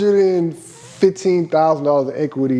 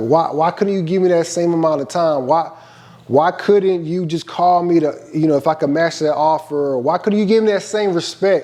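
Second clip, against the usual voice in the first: ordinary delivery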